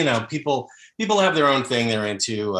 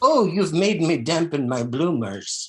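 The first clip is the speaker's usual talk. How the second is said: put-on old grandmother voice, higher pitch; 8 semitones higher than usual. Giving examples of grandmother role-play lines, old grandmother voice. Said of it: "I like a nice grandmother role play".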